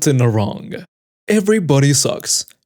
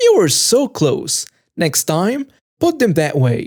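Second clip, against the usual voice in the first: high, slow, condescending cooing voice. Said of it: "she'll condescendingly say".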